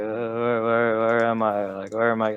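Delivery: put-on mumbling like a blackout drunk. Playing a character as the group leaves a warehouse, drunken mumbling. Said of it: "I'll just be mumbling like... totally super blackout drunk".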